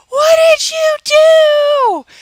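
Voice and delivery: shrill, very high, loud yell, "do" stretched. Retelling their reaction when someone stepped on the cat, retelling own yell. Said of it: "because I yelled".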